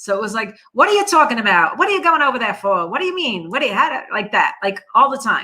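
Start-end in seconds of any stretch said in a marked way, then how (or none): 0.7-4.5 horrible whiny New York accent, swooping.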